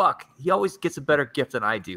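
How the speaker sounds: mock fed-up, pissed-off griping tone. Retelling his wife's reaction to a gift he got, imitating an angry wife. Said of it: "my wife was pissed".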